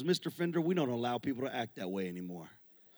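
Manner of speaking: very low, hushed, quiet, dry delivery. Retelling the coach's answer about whether anyone broke the record, imitating his dry delivery. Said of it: "he so dryly said".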